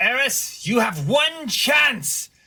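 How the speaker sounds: screaming, shouting. Shouting across to another character in a tabletop game: screaming across. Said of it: "Nox is gonna scream across".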